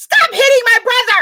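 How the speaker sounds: play-acted, very high, shrill shrieking yell. Retelling what Brittany yelled at the football game, imitating someone screaming. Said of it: "She's screaming in the".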